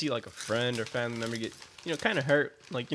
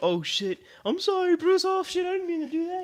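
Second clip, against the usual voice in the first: put-on very high, loud baby talk; 5 dB louder than usual. Retelling apologizing to his dog bruce after accidentally hitting him, voice for talking to a dog. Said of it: "You know the fucking dog voice".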